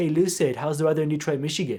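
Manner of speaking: put-on UK accent, light, offhand and casual. Speaker retells what a man asked them during an internet conflict: imitating a uk accent. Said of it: "he asked me in his U K accent".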